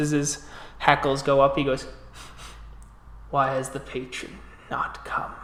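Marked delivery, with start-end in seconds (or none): 3.3-5.3 breathy, whispered animal growl. Narrator voicing a young bear whose hackles go up, growling.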